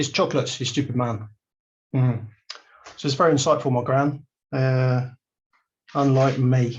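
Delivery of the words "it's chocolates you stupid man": quick, dry, dead-straight deadpan delivery. Telling a story about their gran answering a man, retelling her deadpan reply.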